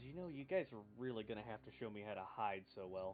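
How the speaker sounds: faint, barely audible half-whisper. Player sneaking in alongside teammates, speaking in a bare half-whisper. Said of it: "In a bare whisper".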